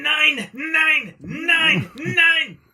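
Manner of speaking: put-on German-accented shouting. Doing a voice for a guessing teaser, voice warned as horrible: imitating Hitler. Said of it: "Are you doing Hitler?".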